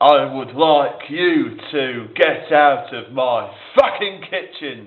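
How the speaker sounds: loud, foul-mouthed, swearing rant. Showing how to imitate him, with every other word a swear word, a Gordon Ramsay impression. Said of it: "to do a Gordon fucking Ramsay impression".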